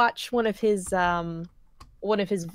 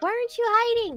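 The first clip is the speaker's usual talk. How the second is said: high-pitched imitated character voice. Telling the others about a game's character, the speaker quotes him in a high character voice. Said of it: "you do a lot of really good high voices".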